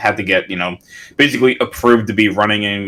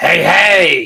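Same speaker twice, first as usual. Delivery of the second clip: raspy put-on clown voice; 9 semitones higher, 4 dB louder than usual. Trying to do a clown's laugh: Krusty the Clown raspy voice. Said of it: "that's his raspiness".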